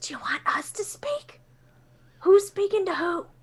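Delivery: hushed whisper. Turning around to ask the trees a question, whispering to the trees. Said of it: "turn around and whisper to the trees".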